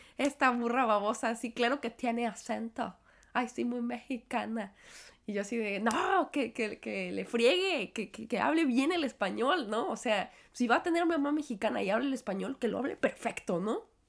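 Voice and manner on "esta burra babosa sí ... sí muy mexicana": ordinary talk, nothing marked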